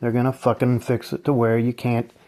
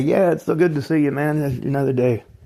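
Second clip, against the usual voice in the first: forced, put-on, fake, everything's-fine cheerfulness; 3 semitones higher than usual. Acting out greeting people at work while pretending everything's okay. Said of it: "pretend like everything's okay".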